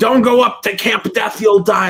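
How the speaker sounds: put-on high-pitched drunk guy voice. Describing a stock figure from every slasher movie, as the lanky drunk slasher-movie dude. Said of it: "like lanky drunk dude in like every slasher movie".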